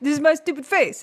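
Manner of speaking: playing-dumb teasing. Doing an impression of a cohost: impression of Brett Druck. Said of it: "my impression of you".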